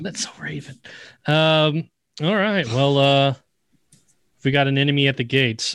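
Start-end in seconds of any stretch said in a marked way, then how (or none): 0.0-0.8 very quiet, hushed whisper under the breath. Voicing a character seeing crows take flight: whisper under his breath. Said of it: "Calvin's gonna whisper underneath his breath".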